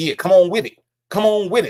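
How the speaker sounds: pushy street-hustler swagger. Imitating how a man talks to Sonya: imitating an old pimp manner. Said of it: "he doesn't come across like".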